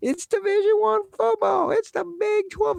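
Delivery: very high, cracking, squeaky put-on voice. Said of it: "his voice is getting high and cracking".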